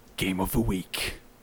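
low, exaggerated gruff manly voice.

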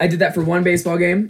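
plain

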